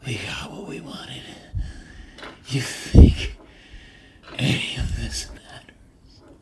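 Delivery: menacing, whispered creature voice.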